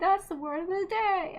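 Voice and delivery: high voice with pinched, tight throat. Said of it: "Pee-wee's voice when he says".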